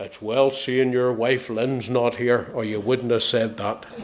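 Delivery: big, low, gruff voice. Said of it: "he said in a big gruff voice".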